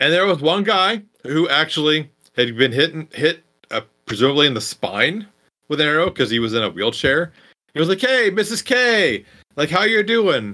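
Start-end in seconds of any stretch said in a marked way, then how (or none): 8.0-10.6 mock cheery, upbeat, pitched up with swooping intonation. Retelling a film scene where a wounded student greets a mother: imitating an upbeat greeting. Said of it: "actually upbeat and kinda happy to see her".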